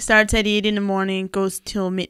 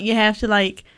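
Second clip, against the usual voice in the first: plain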